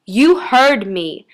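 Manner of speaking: worked-up, impatient, agitated, insistent voice. An unseen voice speaks to a startled sixteen-year-old girl, agitated. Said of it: "an unseen voice said agitatedly".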